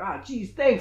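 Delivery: frantic, clownish, spastic comic voice. Retelling how a character thanked a girl: imitating a Jim Carrey impression. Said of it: "he's doing, like, a Jim Carrey impression".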